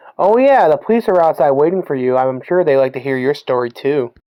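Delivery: ordinary talk, nothing marked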